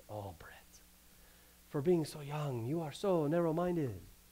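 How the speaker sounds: put-on soft, deep-voiced French accent. Recalling a conversation, speaker quotes what Maurice said to him: Maurice's deep French accent. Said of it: "in his deep French accent".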